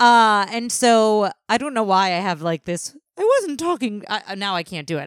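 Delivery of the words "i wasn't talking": poorly done put-on voice, pitch way up. Trying the line again in a bad Miss Piggy voice. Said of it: "my Miss Piggy voice is not good".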